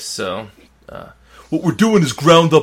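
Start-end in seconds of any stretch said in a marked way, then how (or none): 1.5-2.6 smug, obnoxious put-on voice, raised and high. Reading an exact quote aloud in what the speaker pictures as a douchebag voice. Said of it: "I'm going to read it in what I picture as a douchebag voice".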